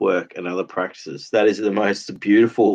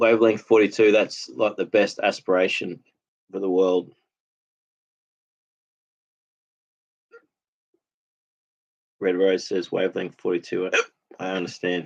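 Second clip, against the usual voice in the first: speech broken by hiccups. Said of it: "these hiccups".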